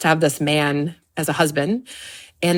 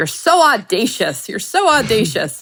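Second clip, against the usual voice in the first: put-on Maine accent laid on thick, high and swooping; 5 semitones higher, 3 dB louder than usual. Retelling what a funny boy in high school said: imitating a thick Maine accent. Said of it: "he had a very thick, uh, Maine accent".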